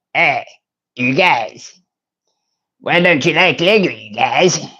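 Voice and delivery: silly, goofy put-on cartoon voice. Joining in on the Lego talk with a Cartman voice. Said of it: "Did that sound a little bit like Cartman?".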